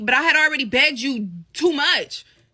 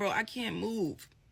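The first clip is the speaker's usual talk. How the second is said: very quiet, slow words spoken through crying; 6 semitones lower, 13 dB quieter than usual. Retelling being pinned under him on the bed, acting out crying words to him. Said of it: "Still crying".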